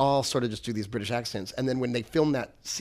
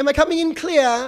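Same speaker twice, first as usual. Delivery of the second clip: put-on British accent, very high pitched; 13 semitones higher, 5 dB louder than usual. Retelling how a child actor delivered a line: imitating a British accent. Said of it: "Does he say it in a British accent?".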